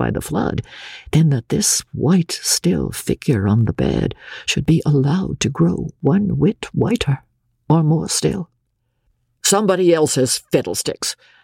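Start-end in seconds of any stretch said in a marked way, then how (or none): 9.4-11.2 explosive, abrupt, inelegant outburst, blurted out. Reading a story aloud, a character retorts to the doctor: exploding in an outburst. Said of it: "exploded Missus Hawks inelegantly".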